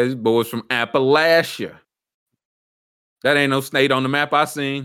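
ordinary talk, nothing marked

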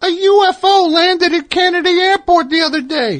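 very high, way-up ventriloquist dummy voice. Doing a ventriloquism bit, answering as the dummy: Billy ventriloquist dummy voice. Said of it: "I have a vape dummy here".

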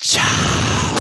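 loud stage whisper. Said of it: "I'm gonna whisper this one".

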